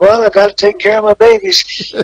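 very high, gentle-spoken voice. Speaker recalls meeting Terry Funk and answers the question as him, soft-spoken. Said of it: "he was just soft as voice".

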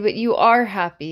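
ordinary delivery

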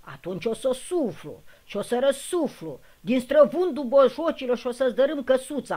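bellowing in rage. The wolf shouts at the third little pig in its brick house: furious bellow. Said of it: "a zbera lupul furios".

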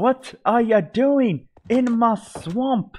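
put-on very high-pitched, drawn-out, slow Scottish accent. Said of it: "Just sounded Scottish there".

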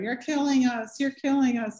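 put-on loud screaming in a New Jersey accent. An ACT UP member jumps up on the pew and confronts O'Connor, in Michael Petrelis's New Jersey accent. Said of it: "in his New Jersey accent".

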